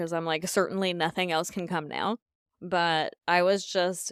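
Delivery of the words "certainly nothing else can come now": ordinary talk, nothing marked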